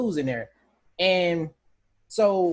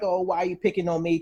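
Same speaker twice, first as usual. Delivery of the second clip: imitated timid voice. Describing how he talks at the beginning, imitating a timid voice. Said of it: "he has a very timid voice".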